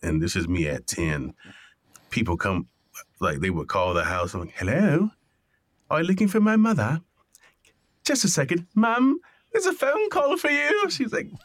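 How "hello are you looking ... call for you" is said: put-on very high, sing-song, swooping British accent. Recalling answering phone calls at home at age ten, in a British accent. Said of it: "why are you talking in a British accent?".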